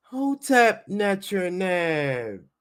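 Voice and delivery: put-on woman's voice, tried hard. Trying her best at a very difficult voice: Doctor Ricketti voice. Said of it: "I'm gonna try my best to do a Doctor Ricketti voice. She talks like this".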